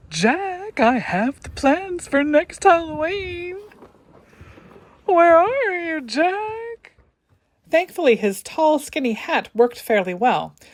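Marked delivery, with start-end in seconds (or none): 0.1-6.9 high, goofy voice, with a drawn-out word. Making a handmade figure talk while painting it, goofy Mayor voice. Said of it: "making him talk in my best Goofy Mayer voice".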